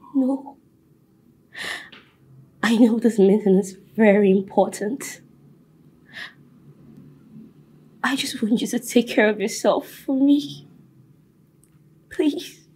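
tearful voice, speaking through tears, crying. Telling someone not to cancel an important meeting and to take care, crying. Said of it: "Stop crying".

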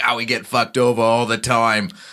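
failed fake Boston accent. Mocking a winning team's complaint about the league, in a bad boston accent. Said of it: "That's not a Boston accent".

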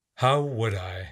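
weary, tired, worn-out voice. David replies to his grandfather's question, weary. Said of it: "Said David wearily".

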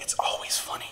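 barely-there, hushed, breathy whisper. Pleading with listeners about a word, whispering.

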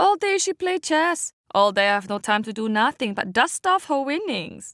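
woeful, lamenting tone, pitched a little high. Auntie Lindo complains to the narrator's mother about Waverly, Auntie Lindo lamenting.

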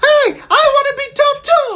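very high, squeaky voice. In a skit, the man pointed to as muscle chimes in: voice like Mickey Mouse. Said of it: "You sound like Mickey Mouse".

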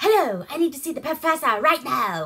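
garbled fake English accent, old-movie style. Retelling a bad movie scene, imitating a fake english accent. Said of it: "some kind of fucked up Englishy accent".

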